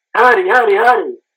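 high-pitched, repeated, acted-out screaming. Retelling a play in a match, calling to a player, retelling screaming a name. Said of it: "I was screaming at him like".

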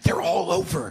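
play-acted, heated, angry screaming outburst. Recounting waiting for a cab, retelling screaming on the phone. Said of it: "I'm screaming on the phone".

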